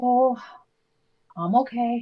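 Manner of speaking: flat, dull, unenthusiastic tone. Answering a greeting asking how they are: unenthusiastic. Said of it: "that didn't sound too enthusiastic".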